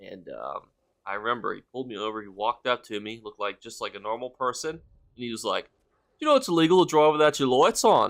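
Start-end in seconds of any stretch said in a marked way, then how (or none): 6.2-8.1 very loud, swooping, put-on Australian accent. Retelling what a police officer said after pulling the speaker over: Australian accent. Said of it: "Hopefully that was a good Australian accent".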